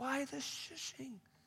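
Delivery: high, slow, puzzled, bewildered tone.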